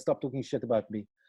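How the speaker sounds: ordinary talk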